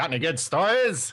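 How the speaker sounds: put-on old-timey newsman voice. Joking about going to an event as press: 1920s journalist voice. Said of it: "I could talk like a nineteen twenties journalist".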